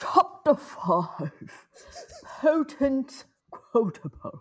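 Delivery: British accent. Asked to read a chapter title pretending to be Dumbledore, in Dumbledore voice. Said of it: "just with a British voice".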